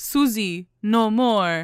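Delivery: dumb caveman voice. Retelling a show scene, imitating Harvey as a dumb caveman: Harvey caveman voice. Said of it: "they made him seem like a dumbass, like, caveman".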